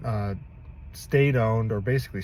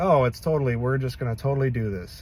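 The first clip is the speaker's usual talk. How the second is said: mocking, put-on flippant, dismissive, offhand tone; 2 semitones higher than usual. Speaker mimics how others talk about destroying the west, mocking a flippant tone. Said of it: "They're saying it flippantly".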